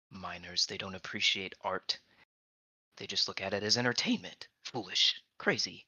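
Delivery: muttering under breath, mumbling to oneself. A character marching off after being dismissed, muttering under his breath. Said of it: "he's just muttering under his breath".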